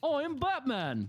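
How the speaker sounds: high, slow put-on British accent.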